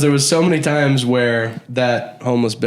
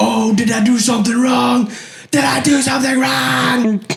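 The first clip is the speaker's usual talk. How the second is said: very high, shrill, mock screaming complaint; 12 semitones higher than usual. Retelling a woman screaming at you while you tell her to leave, imitating her screaming. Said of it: "As she's just screaming at me going".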